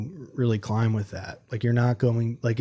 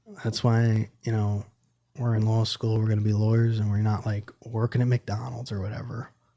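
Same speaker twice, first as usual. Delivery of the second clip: ordinary delivery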